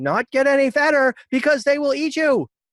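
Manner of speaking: very high, loud shout, acted out. Retelling how Chihiro yells at her parents: imitating Chihiro yelling. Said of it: "she yells at them".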